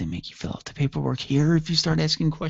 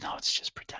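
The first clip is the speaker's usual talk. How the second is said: very soft hushed whisper. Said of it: "why are we whispering?".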